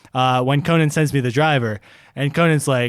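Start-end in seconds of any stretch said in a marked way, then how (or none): none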